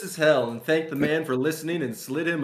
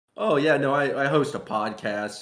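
ordinary talk, nothing marked

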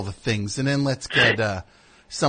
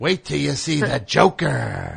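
rough, creaky, raspy villain voice, last word stretched; 3 semitones higher than usual. Mocking an actor's performance as a comic-book villain: imitating Jared Leto's Joker. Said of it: "He talks like that every time".

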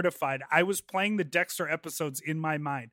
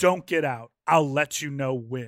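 put-on very serious tone, lower pitch; 2 semitones lower, 3 dB louder than usual. Retelling what he said after pushing the teller back into the seat, very serious tone. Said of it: "says with the most serious tone".

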